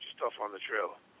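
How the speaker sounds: hushed, very quiet, breathy near-whisper murmur. Retelling what a coach said to him: imitating a real quiet voice. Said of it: "real quiet".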